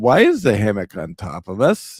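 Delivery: words spoken while laughing. Retelling falling out of a hammock onto the ground: imitating laughing while talking. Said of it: "we're both sitting there on the ground laughing, going".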